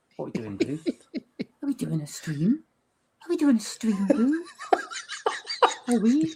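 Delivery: squeaky, very high, rising, sing-song pet-talk voice. Talking to boo while the others watch, use an unusual voice. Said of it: "I've never heard you do that voice".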